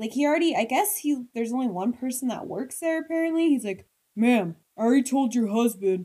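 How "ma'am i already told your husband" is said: condescending, snooty, strange official-sounding voice. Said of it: "huge dickhead guy who's like".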